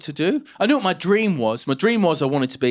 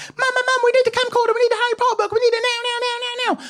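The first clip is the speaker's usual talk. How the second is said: mock very high, bursting child excitement. Recounting running to Mum at eleven, acting out excited past self. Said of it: "I was so excited".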